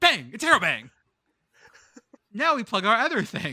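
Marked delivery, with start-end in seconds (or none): 0.0-0.9 loud, raised, belted-out comedian yell. Practicing an ad read punctuated with an interrobang, the speaker does a Sam Kinison impression. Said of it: "I'm Stan Kinison all of a sudden".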